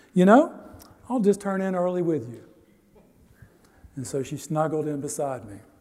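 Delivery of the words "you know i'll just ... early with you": sweet, tender, high and quick. Quoting your wife at bedtime, imitating her speaking sweetly. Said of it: "said sweetly".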